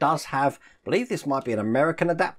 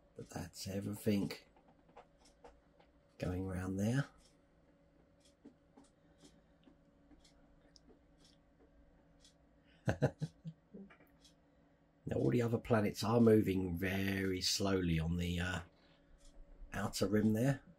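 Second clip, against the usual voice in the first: half-whispered, barely audible, very quiet narration; 7 semitones lower, 14 dB quieter than usual. Showing a moving planet model so listeners can hear the silent motor, half-whispering. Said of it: "I'm sorry I'm whispering".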